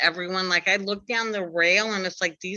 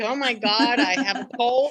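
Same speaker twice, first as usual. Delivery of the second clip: mock sobbing, higher; 4 semitones higher than usual. Retelling her own words while in tears at a concert: retelling own crying. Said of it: "in tears, like Oprah crying".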